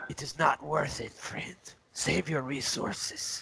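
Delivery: quiet, breathy, hushed private whisper. In a role-playing game, speaking to another character: whispering. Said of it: "I kind of whisper to him".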